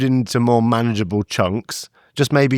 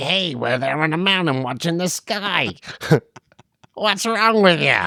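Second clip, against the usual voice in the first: put-on Chicago American accent; 6 semitones higher than usual. Improvising a character on a stargazing trip, in an American accent. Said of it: "I've only got one American accent".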